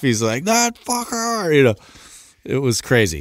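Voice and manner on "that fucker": mock furious yell, very high-pitched. Retelling the guy yelling outside about the window: imitating someone yelling angrily. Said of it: "yelling outside".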